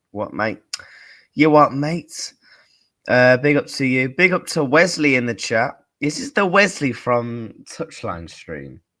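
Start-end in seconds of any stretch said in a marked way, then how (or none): 0.2-2.4 put-on Australian accent, louder. Speaker in a stream chat, replaying his own attempt at an accent: australian accent. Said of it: "I don't know why I was like".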